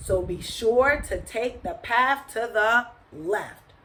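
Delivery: plain reading voice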